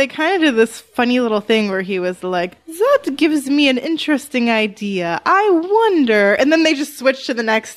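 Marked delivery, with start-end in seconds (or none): 2.7-6.3 put-on slow, high-pitched German accent. Describing a scene, the speaker quotes Beaumont getting an idea, in a German accent. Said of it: "Was he German?".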